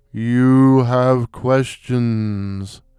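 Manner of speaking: deep, ghostly, otherworldly spectral intoning. Narrator reads a floating human skull addressing him: deep, spectral intoning. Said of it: "it intoned in a deep, spectral voice".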